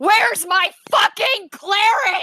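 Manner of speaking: furious screaming. Imagining a character kicking in the door, screaming in rage as Alyssa. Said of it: "she's just gonna scream".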